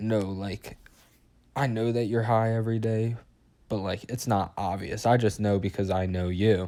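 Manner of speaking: ordinary talk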